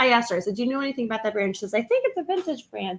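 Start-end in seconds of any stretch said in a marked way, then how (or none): 1.7-3.0 high, squeaky, dorky voice. Quoting what a woman in a store said, in a dorky, squeaky voice. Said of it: "that dorky, squeaky voice that I just did".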